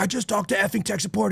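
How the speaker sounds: irate, very high, rasping, rough, angry voice. Retelling what an annoyed customer said to him: imitating an angry customer. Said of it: "and he'd be pissed off".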